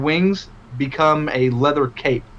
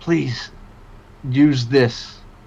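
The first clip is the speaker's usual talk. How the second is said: put-on old, gravelly voice, close and intimate. A game master speaks right at the player's ear as old Drac, in an old gravelly voice. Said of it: "you hear a old gravelly voice behind you".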